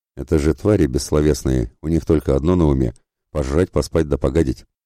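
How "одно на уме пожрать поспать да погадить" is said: plain reading voice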